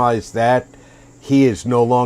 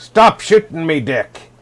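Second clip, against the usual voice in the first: put-on pirate character voice, pitched up; 5 semitones higher, 3 dB louder than usual. While gaming with a friend, showing how the line sounds in pirate voice. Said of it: "your with a pirate voice".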